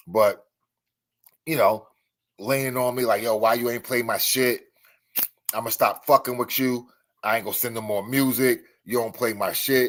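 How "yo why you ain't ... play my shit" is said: usual speaking voice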